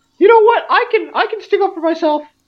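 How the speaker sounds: put-on very high, loud, squeaky old dwarf voice. Playing an old dwarf mocked for his voice, in a weirdly high old dwarf voice. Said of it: "he's got a weirdly high voice".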